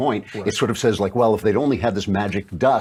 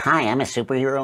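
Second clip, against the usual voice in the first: put-on very small, girly little voice; 4 semitones higher than usual. Imitating the actress from the movie previews: Brie Larson's girly little voice. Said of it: "she's got this kind of very girly little voice".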